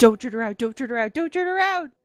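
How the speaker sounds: panicked, frantic, rushed character voice. Voicing a sword gone into hyper mode: frantic talking sword voice. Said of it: "your sword goes into hyper mode. And says".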